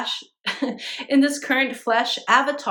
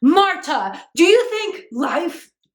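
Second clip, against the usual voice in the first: yelling, higher and louder; 6 semitones higher, 5 dB louder than usual. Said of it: "he's like".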